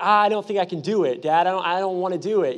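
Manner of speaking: plain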